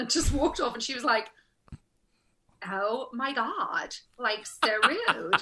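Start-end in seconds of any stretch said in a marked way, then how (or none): 2.7-5.4 really obnoxious, very slow drawl. Retelling what an obnoxious actress on set said: imitating an obnoxious California actress. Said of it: "really, really obnoxious".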